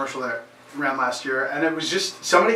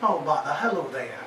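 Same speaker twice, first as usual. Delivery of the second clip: put-on cartoon storybook bear character voice; 4 dB quieter than usual. Showing a voice that was learned by mimicking: Winnie the Pooh voice. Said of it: "I learned to do Winnie the Pooh".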